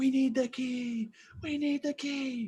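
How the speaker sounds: very high, all-out, drawn-out scream. Voicing a character trying to get friends' attention: screaming as loud as possible. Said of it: "I'm just screaming as loud as I can".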